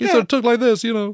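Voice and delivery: curiously odd, very high-pitched voice. Showing how a general sounded: Patton's curiously high voice. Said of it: "Patton had a curiously high voice".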